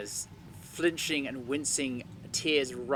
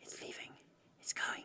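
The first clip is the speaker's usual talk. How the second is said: very quiet, breathy, hushed whisper, barely voiced. In the dark, Kashara whispers to the others about the lumbering thing. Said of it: "she whispers".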